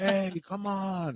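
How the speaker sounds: mock yelling. Acting out yelling at time-wasting players: imitating someone yelling. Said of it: "Yelling like".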